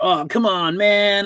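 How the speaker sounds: very high, very slow, drawn-out surfer-dude drawl. Retelling how a dubbed movie character talked: surfer voice imitation. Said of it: "his voice was like a surfer".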